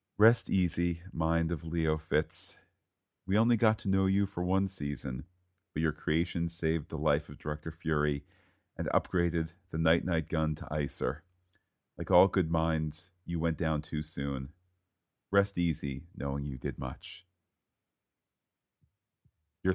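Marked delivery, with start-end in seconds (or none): 0.2-17.3 grave, solemn funeral-oration tone. Reading aloud a eulogy sent in by a pal, serious voice. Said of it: "Serious voice".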